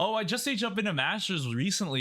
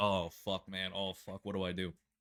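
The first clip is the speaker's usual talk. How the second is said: put-on flustered, at-a-loss panic; 9 semitones lower, 8 dB quieter than usual. Retelling being outplayed in a match while sweating: imitating own past panic. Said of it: "So I'm like".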